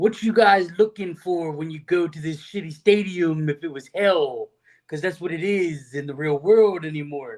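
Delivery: put-on Italian accent held throughout. Asked what they have tonight, the speaker answers in an Italian voice. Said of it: "try to do this with my Italian voice here".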